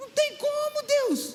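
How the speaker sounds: desperate, despairing tone.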